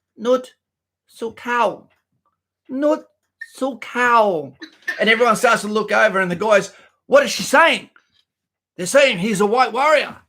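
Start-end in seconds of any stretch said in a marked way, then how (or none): 0.2-4.5 small, tiny, very slow little voice. Retelling what a woman said during a fight, in a small little voice. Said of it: "she says in a little voice".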